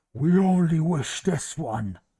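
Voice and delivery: empty-sounding, very loud voice. Narrating a game, voicing an armored creature pointing its sword at a character, hollow voice. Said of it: "with a hollow voice".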